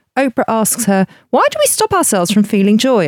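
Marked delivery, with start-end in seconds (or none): 1.3-3.1 shrill, screeching voice. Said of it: "I'm sure she doesn't say it that screechily".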